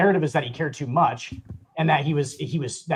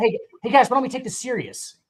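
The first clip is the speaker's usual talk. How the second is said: naggy, pitched-up, nagging voice; 9 semitones higher than usual. Imitating a player who nagged teammates to take it seriously: imitating naggy Chris Paul. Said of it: "He was just, like, naggy".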